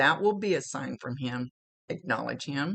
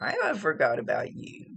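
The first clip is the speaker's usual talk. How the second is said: cute, cocky, sing-song little voice; 3 semitones higher than usual. Retelling what he says to her: imitating a cute, cocky little voice. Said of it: "he says it in kind of a little cute, cocky little".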